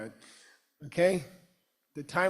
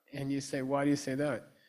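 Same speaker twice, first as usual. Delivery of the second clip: ordinary talk, nothing marked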